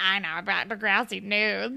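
put-on weird creepy doll voice. Describing a pull-string doll from a show, in a weird creepy doll voice. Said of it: "it's like a weird voice".

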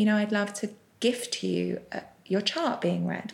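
plain

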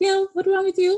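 put-on Trinidadian accent. Retelling how the mom had a fit: imitating mom's Trinidadian accent. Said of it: "That's what that accent was".

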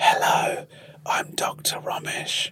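imitated ASMR whisper. Retelling an asmr video pretending to be doctors: imitating own asmr whisper. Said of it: "insisted on whispering".

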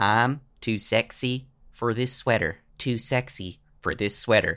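simple, low-key, understated Pennsylvania drawl. Retelling a man's words to an audience, in his understated Pennsylvania drawl. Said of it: "in his simple, understated drawl, Pennsylvania drawl".

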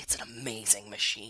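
acted-out strained intensity, angry and dead serious. Imitating how a film character delivers a line: imitating Lance's angry serious delivery. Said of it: "like, angry and, like, serious".

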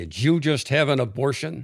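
mock very stern, hard, loud, demanding voice. Retelling how their partner took a woman by the arm and asked her: retelling a very stern question. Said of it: "in a very stern voice said".

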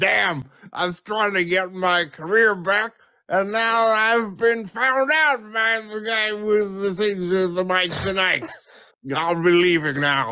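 high comic prospector character voice. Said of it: "This is [name] acting as Prospector Larry".

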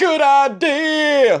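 very high mocking Florida voice, "idea" dragged out. Mocking someone in Florida who thinks dumb things are good: dumb Florida person impression. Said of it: "That was my impression of someone in Florida".

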